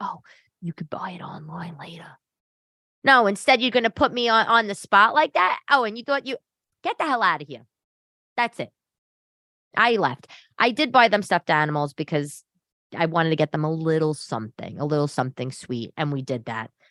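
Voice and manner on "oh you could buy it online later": soft, close whisper as if in the ear. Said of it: "why don't you whisper in my ear".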